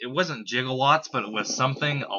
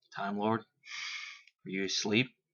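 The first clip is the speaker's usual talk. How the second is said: hushed, careful, slow, soft whisper; 4 semitones lower, 8 dB quieter than usual. Retelling checking whether someone had fallen asleep: imitating own whisper. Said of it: "I kinda whispered".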